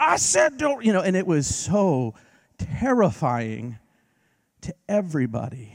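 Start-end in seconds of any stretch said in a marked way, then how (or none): 0.0-0.8 mock yell, higher and louder. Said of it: "remember what the woman was yelling?".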